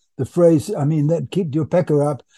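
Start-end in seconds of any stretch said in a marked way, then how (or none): none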